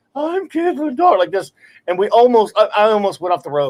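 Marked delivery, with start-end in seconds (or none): 0.2-1.2 woman's voice pushed up very high. Retelling how he heightened his voice to do hers: Caitlin Dar voice. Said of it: "heighten his voice".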